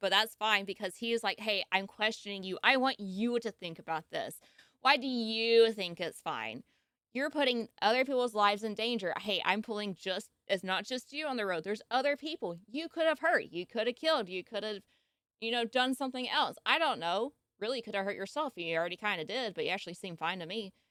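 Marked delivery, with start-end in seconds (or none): none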